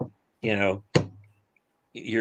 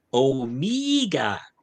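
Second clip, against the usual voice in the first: slow, drawn-out attempted New Zealand accent. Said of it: "nowhere near a New Zealand accent".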